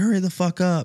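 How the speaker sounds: piercing scream, pitched very high. Recalling a man on the tee box yelling at him, imitating a guy screaming. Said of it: "he's screaming".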